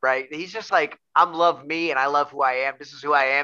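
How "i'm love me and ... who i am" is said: plain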